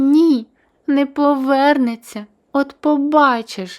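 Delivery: exclaimed outburst, crying out. Narrator reads a daughter contradicting her mother, crying out. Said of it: "скрикнула Леся й тупнула ніжкою".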